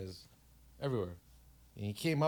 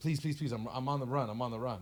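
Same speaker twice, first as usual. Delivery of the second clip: put-on breathless, out-of-breath pleading voice; 2 semitones higher than usual. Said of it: "This guy's out of breath".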